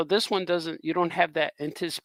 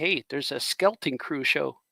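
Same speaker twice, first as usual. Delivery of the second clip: normal talking voice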